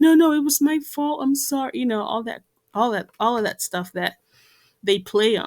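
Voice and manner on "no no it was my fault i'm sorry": weepy, high-pitched, tearful crying voice. Acting out an injured woman apologizing to her abuser: imitating a woman crying. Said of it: "And she's crying".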